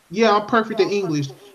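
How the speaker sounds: usual speaking voice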